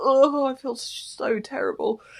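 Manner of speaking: put-on whiny sick moan. Describing being sick, acting out her own complaints, mock whiny sick moaning. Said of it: "so I've just been really fucking whiny".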